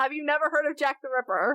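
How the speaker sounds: ordinary talk, nothing marked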